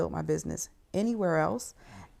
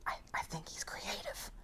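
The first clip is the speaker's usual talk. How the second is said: very quiet, hesitant, faltering whisper; 2 semitones higher, 15 dB quieter than usual. Retelling what parents said after a talk: imitating parents whispering. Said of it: "they were whispering".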